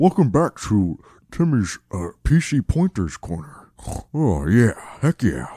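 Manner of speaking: put-on fat guy character voice. Doing a bit welcoming viewers back to the corner: fat guy impression. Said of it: "his fat guy impression".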